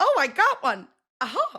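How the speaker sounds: high, sing-song, unhurried cartoon voice. Retelling how a contestant sounded on a side quest: Mario and Luigi voice. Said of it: "sounding like Mario and Luigi".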